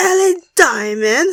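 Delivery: bad Scottish accent, pitched high. Saying a queen's name in a Scotland accent: Lawrence Chaney voice. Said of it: "saying it in the Lawrence Chaney voice".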